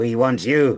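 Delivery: snarling creature shout. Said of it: "he shouts".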